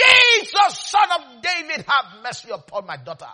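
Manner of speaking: high, very loud, shrieking scream. Speaker acts out the woman from Canaan shouting at Jesus: retelling a scream. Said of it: "that woman shouted at Jesus, scream!".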